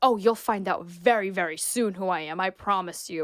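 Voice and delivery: put-on Middle Eastern accent. Retelling how a man in a video answered when asked his name, thick Middle Eastern accent. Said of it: "with like a thick Middle Eastern".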